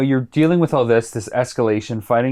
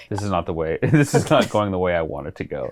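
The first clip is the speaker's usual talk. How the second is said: put-on deadpan, dry and low; 4 semitones lower than usual. Telling how he reacted to being splashed in the pool, the speaker imitates his deadpan.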